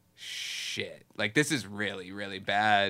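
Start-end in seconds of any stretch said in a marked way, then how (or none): none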